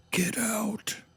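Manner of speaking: high, ghostly whispered voice. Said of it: "voices whisper".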